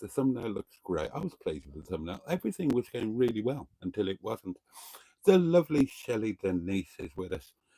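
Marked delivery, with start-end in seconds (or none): none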